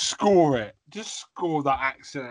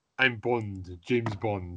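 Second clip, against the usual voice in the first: put-on spy voice, Indian-sounding accent, pitched much lower; 5 semitones lower, 4 dB quieter than usual. Make the listener guess which James Bond you were going for, with a James Bond impression gone Indian-sounding. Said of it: "that's India".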